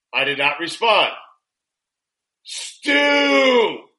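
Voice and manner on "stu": high, loud, full-volume shout. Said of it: "all capitalized".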